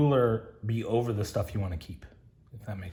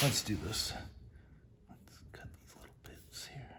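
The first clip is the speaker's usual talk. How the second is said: whispering, much quieter; 11 dB quieter than usual. Someone cutting small parts for a project talks to the camera, whispering. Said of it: "I don't know why I'm whispering".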